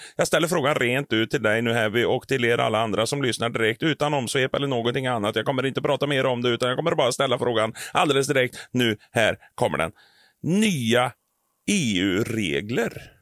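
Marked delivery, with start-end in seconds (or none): 9.1-13.0 put-on mixed Norrland and Norwegian accent. Speaker puts his question to Heavy and listeners, Norrland-Norwegian mixed accent. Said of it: "vad var det för dialekt? Blandning av norrländska och norska".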